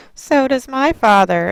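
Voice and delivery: high, whiny, mocking mimicry. Narrator reading Asef mimicking the narrator, Asef mocking in whining voice. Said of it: "Asef mimicked me in a whining voice".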